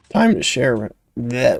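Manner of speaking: breaking voice, cracking mid-phrase. Announcing it is time to share, the speaker's voice cracks. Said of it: "that was a voice crack".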